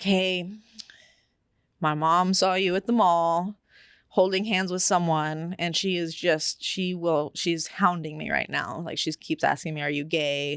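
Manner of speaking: normal talking voice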